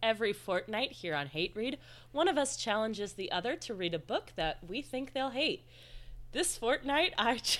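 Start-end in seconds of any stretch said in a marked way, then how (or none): 6.3-7.6 talking through laughter, higher pitch. Introducing this fortnight's book challenge, laughing while talking. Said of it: "you can't even finish your sentence without laughing".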